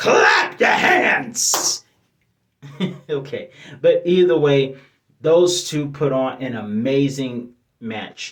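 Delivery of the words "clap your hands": very high-pitched crying preacher voice. Recapping a wrestling match, Big E as a preacher. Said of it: "he was Bishop E".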